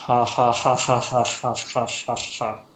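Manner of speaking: put-on deadpan, slow, flat, awkward "ha-ha" laugh. Imitating a skilled mage's awkward laugh, flat monotone laugh. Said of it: "very awkward, at least to you, uh, like uh, monotone laugh".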